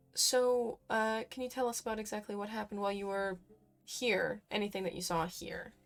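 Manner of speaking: soft voice dropped to a hush. Questioning Lucky Wish about what happened while here: hushed tone. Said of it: "speak in a bit more of a hushed tone".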